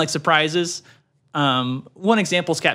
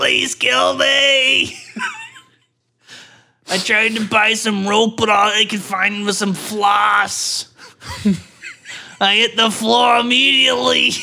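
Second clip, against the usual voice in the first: put-on sing-song, swooping old Brooklyn woman accent, "me" drawn out; 4 semitones higher than usual. Playing a made-up old woman who pleads with her neighbors, old Brooklyn woman accent. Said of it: "she has like a Brooklyn accent".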